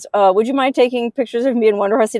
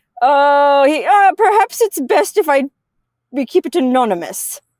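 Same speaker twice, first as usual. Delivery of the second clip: put-on German accent, higher pitch; 4 semitones higher than usual. Driver retelling what a client he picked up at the airport said, imitating a German accent. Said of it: "Like he had a German accent".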